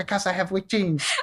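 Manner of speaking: put-on very high-pitched voice with a New York accent. Retelling a friend's reply to instructors in a New York Bugs Bunny accent. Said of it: "talking in his New York Bugs Bunny accent".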